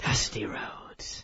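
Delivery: slow, soft, breathy, hushed whisper.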